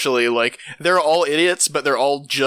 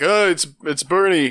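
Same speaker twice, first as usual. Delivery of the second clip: put-on old politician voice, oddly vampire-like, pitched higher; 3 semitones higher than usual. Going from table to table in a mask: Bernie Sanders impression. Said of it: "This is my Bernie impression".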